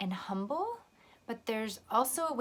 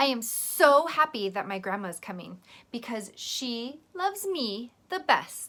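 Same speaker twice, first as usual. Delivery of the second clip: loud, boastful show-off bragging tone; 6 dB louder than usual. Showing how a change of tone changes a line, in a bragging tone. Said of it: "did you see how my tone changed? ... it sounds like you are bragging".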